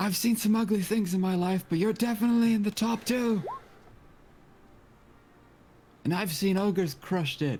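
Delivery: hollered jeer, very high and shrill. Playing a character who yells out to taunt a wolf: yelling a taunt. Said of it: "Gray's just gonna yell out".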